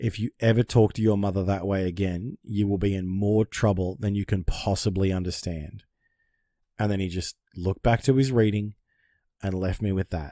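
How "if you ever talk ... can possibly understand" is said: plain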